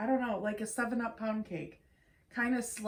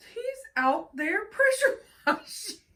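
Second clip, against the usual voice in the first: very loud, very high, shrill furious rant; 11 semitones higher, 8 dB louder than usual. Telling how John flung the door open about the neighbor: retelling an angry rant. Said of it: "He ranted for about 20 minutes".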